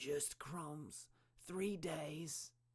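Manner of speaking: high, croaking, croaked-out voice. A man answers a woman's question about when he last ate: croaking. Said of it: "he croaked".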